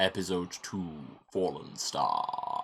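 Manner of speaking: very slow, grave, ominous, portentous announcer voice. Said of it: "you sound like Darth Vader".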